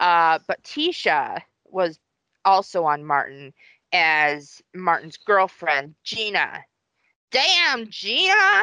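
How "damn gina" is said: horrible, very high squeal. Telling a listener about the actress who played the girlfriend on the show, do a horrible Martin impression. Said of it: "I know that was a horrible, horrible impression".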